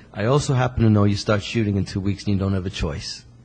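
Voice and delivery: ordinary talk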